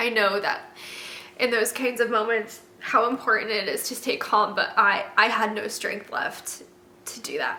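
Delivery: speaking while crying. Speaker reliving a hard moment, crying while speaking. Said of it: "Sorry for crying".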